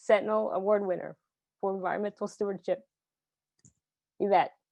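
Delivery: choking up with emotion. Introducing an award winner to the audience, choking up with emotion. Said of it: "I'm gonna get choked up".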